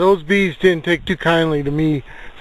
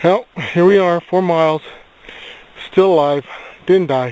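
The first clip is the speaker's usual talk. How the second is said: breathing hard, out of breath, panting. Speaker after four miles, looking for a single track, breathing hard. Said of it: "breathing hard".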